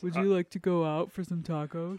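mock flirtatious actress voice. Retelling teasing a partner with a Scarlett Johansson impression. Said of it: "As all of my impressions are".

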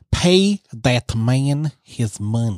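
slow, drawn-out mock Russian accent.

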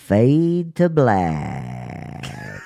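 cartoon chipmunk squeak. Trying one more take, the speaker does the chipmunk voice.

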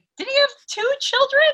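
very high, fast incredulous tone.

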